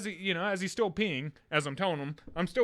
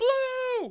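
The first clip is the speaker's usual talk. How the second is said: put-on very high, thrilled, squealing excited little-kid voice; 4 dB louder than usual. Retelling a kid getting a blue juice: imitating an excited child. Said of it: "all excited about it".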